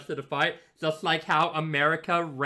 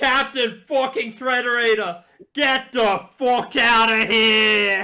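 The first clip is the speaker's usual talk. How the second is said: referee-style wind-up announcer voice, higher and louder; 7 semitones higher, 9 dB louder than usual. Performing the whole line the other speaker asked for: referee wind-up call. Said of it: "I'm doing the fucking referee wind-up".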